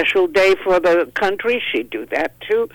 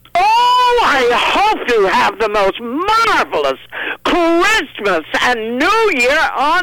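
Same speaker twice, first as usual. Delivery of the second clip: high, put-on wicked, scheming villainess voice; 9 semitones higher, 4 dB louder than usual. Asked how Ursula would wish everyone a Merry Christmas, answering in Ursula voice. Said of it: "If Ursula wished us a Merry Christmas, what would it sound like?".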